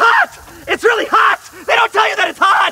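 shouting out. An awards-show host, cut off mid-introduction, yelling. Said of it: "(Shane yelling)".

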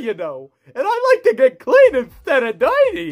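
swooping, sing-song cartoon voice. Voicing Wally Gator in a cartoon bit: Wally Gator voice. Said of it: "This is Wally Gator".

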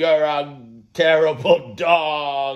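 booming, very loud, very high, shrill teasing yell. Testing whether the dog reacts to loudness, speaking loudly. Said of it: "I'm so loud".

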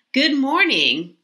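high, exclaimed, excited voice. Gary Giraffe wakes as the sun comes up on his birthday, exclaiming. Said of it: "Gary Giraffe exclaimed".

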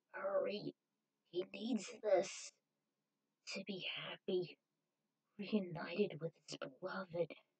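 faint, nearly inaudible, barely audible voice. A narrator reads the wounded woman's plea to Zero, barely audible. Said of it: "Voice was nearly audible when she explained that she was a type O, much like [name] and Vicious".

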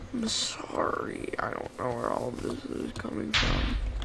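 low, unvoiced whisper.

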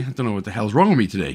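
usual speaking voice

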